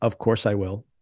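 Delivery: ordinary delivery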